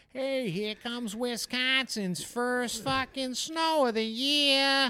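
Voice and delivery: slight Chicago accent, pitched way up and loud. Chatting about a 14-day forecast, the speaker acts out a line in a slight Chicago accent. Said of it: "sounds a little more like a Chicago accent".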